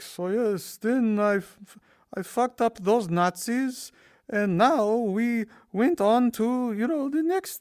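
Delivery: put-on high, loud, drawn-out Italian accent. Imitating the game's old man narrator after a kill: put-on Italian accent. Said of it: "he'll start talking in his Italian accent".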